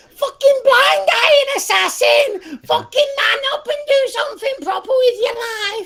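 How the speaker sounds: put-on very high-pitched voice of a twelve-year-old kid. Teasing the listener by playing their 12-year-old self, imitating your 12-year-old self. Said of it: "This is 12-year-old you".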